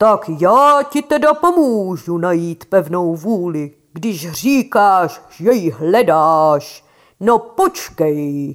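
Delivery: deep, ominous, threatening, menacing shout. Reading a story, voicing the storm cloud shouting at Bedřich, deep menacing shout. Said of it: "zakřičelo hlubokým a zlověstným hlasem".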